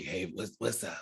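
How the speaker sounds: soft, rough, raspy voice. Asked how it goes, the speaker imitates T's raspy hungover voice. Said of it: "It's like real raspy".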